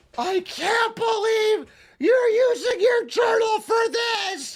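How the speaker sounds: put-on very high, sobbing, bawling wail through tears. Retelling finding mom bawling over the journal: imitating mom crying. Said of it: "She's fucking bawling".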